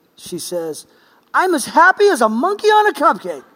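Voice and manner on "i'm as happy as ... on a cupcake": loud, booming declaration. Retelling a bank visit, answering the teller, imitating Auntie Amadis booming. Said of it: "with a loud booming voice in this bank".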